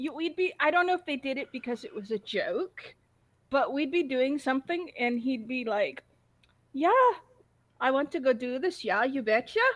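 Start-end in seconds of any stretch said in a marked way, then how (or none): 6.7-9.6 put-on strong, thick Swedish accent. Retelling what a swedish friend would say: imitating a friend's swedish accent. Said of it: "He had such an accent when he talked in English".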